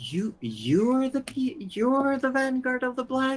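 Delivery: disappointed character voice. As the herbalist Vera looking up at a player in her shop, sounding disappointed. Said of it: "You sound disappointed".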